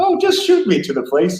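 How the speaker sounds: very high cartoon character voice, top register. Retelling a funny YouTube video the speaker watched: Mickey Mouse voice, really high. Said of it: "He's got a really high voice".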